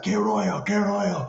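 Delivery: high, yelled, taunting heckling tone. Retelling how a man in a car started yelling at the speaker: imitating a man yelling. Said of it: "he starts yelling at me".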